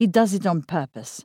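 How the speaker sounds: ordinary delivery, nothing marked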